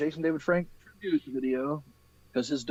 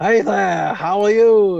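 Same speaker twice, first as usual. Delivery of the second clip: very loud, high, slow, belted cartoon voice; 7 semitones higher, 11 dB louder than usual. Introducing yourself to someone you've just met, in an Ice King impression. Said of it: "doing a an impression of Ice King".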